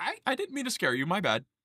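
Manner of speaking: put-on high voice of a young teenage girl. Narrating a game scene as the player jumps back, in a young teenage girl voice. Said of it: "this young teenage girl is like".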